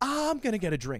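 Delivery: acted, flustered, embarrassed with a small laugh. Retelling what a woman said before leaving the venue, mock-embarrassed, laughing a little. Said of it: "red from embarrassment, laughs a little bit".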